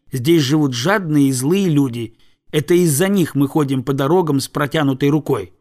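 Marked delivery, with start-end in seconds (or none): none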